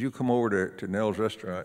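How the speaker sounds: normal talking voice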